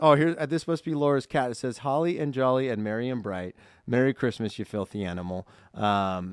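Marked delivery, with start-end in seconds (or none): none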